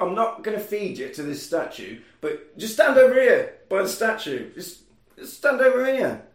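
high, sleazy, coaxing, wheedling voice.

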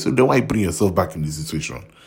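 ordinary delivery

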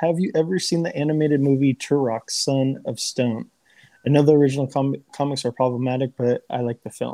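ordinary talk

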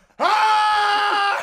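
mock scream, high-pitched and loud.

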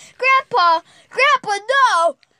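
high, loud scream in terror. Reading a horror story aloud, voicing the granddaughter as her grandfather raises a knife: screaming in terror. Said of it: "She screamed in terror".

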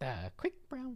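very high, soft, squeezed frog voice. Asked to say the test sentence like Kermit, attempting a Kermit the Frog voice. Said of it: "Kermit here?".

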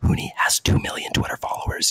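whispered close.

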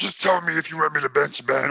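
deliberately bad, rough, gravelly, grimy rasping voice. Quoting what someone told a reporter, in a rough gravelly put-on voice. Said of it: "With your grimy ass voice, chewing rocks. I'm sorry, that was a terrible impression".

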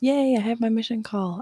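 cheery, upbeat, excited and cheerful. Announcing a mission call, trying to sound more excited. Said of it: "I should sound more excited".

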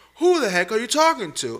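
very high, shrill, very loud indignant outburst. Recounting a man coming in with a screaming attitude, retelling an angry outburst. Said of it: "it triggers me".

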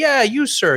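high-pitched, cocky attitude.

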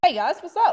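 talking through a mouthful, a little high. Greeting the others on joining the call, talking with a mouthful of noodles. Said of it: "With a mouthful of noodles".

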